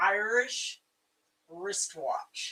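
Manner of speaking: super slow, careful delivery, drawn out word by word. Explaining a phrase that is hard to get out, saying it super slow like Rose. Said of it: "I have to say it super slow like Rose does".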